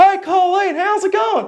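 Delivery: very high, drawn-out yell, called across distance. Retelling a bus-stop encounter, imitating a man yelling a greeting. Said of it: "he yelled at her".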